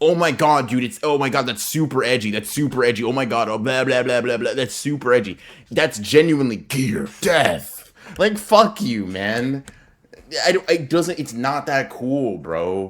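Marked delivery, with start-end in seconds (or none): 0.0-5.4 gushing, adoring fan voice. Imitating fans praising a fan artist's drawing: imitating fans gushing with praise.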